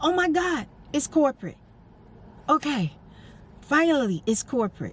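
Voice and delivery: high, relieved, finally-at-ease outburst. Retelling answering a call from corporate: imitating own relieved reaction. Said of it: "You feel a sense of relief".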